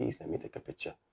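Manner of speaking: mock hushed, whispered, begging plea. Recounting what happened with the man who slapped him, retelling a begging plea. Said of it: "I begged him".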